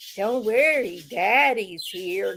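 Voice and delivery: put-on creepy slurred voice. Telling off a woman, mimicking the voice in the dark: creepy slurred voice. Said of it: "that voice in the dark slurring that creepy".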